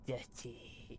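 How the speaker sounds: hushed, disgusted little whisper. Retelling how a small child says dirty: imitating a disgusted child. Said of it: "he'll scrunch up his face as much as he can".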